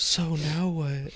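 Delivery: constant, annoying, hushed, nagging half-whisper. Complaining about annoying half-whispering at the movie theater, imitating a half-whisper. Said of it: "Just the constant like whisper".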